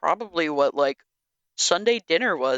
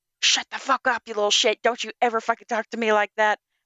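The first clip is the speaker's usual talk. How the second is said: mock mother voice in a furious tirade; 4 semitones higher than usual. Retelling a film scene where a mother goes off on her kid: imitating a furious mother yelling. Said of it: "she went the fuck off on her kid".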